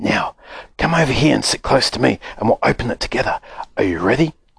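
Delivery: hushed whisper. Narrator reading the old man's words to Charlie, whispered. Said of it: "the old man whispered".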